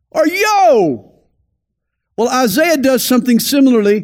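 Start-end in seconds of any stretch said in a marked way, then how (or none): 0.1-1.1 put-on shouting, high. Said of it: "I might shout".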